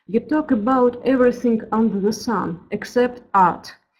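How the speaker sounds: ordinary talk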